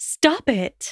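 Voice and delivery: sharp angry retort. Narrator reads her interrupting another character, snapping angrily. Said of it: "she snapped angrily".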